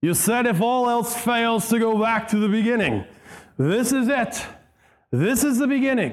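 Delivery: put-on boozy slurring. Retelling the movie scene where the brute squad clears the thieves forest, Inigo speaking drunkenly. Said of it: "Inigo says this, drunkenly".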